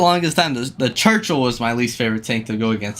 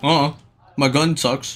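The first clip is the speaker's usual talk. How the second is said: ordinary talk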